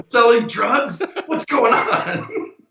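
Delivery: alarmed, panicked, drawn out and high. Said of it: "she called me so concerned".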